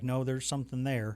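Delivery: plain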